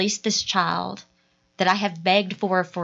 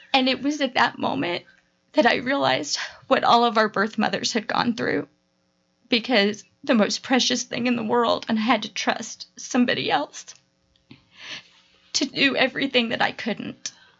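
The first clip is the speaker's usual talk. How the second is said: tearful, pitched-up voice; 5 semitones higher than usual. Telling a personal story to other speakers, crying while talking. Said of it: "we're all crying now".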